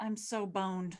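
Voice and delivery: low mumble under the breath. Tabletop player speaking as their character, muttering. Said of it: "she just mutters".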